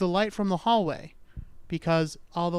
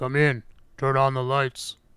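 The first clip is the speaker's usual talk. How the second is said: voice forced deep, below normal pitch; 4 semitones lower, 3 dB louder than usual. Storyteller voicing a voice behind a locked door: low voice. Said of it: "I don't really have a low voice".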